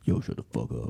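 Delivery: deep, breathy, half-whispered voice. Imagining a teammate answering opposing fans: imitating Omar's deep voice. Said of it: "does his, like, deep voice".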